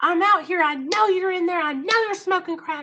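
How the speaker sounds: put-on shrill, very high, loud, enraged, furious screaming. Retelling banging on a crack hotel door at night: retelling own screaming. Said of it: "I'm screaming out here on Park Avenue".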